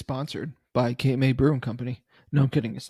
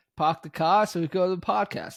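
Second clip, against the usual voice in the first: put-on Boston accent; 5 semitones higher than usual. Joking with a co-host about how he says pod: mock Boston accent. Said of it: "pod sounds like Boston".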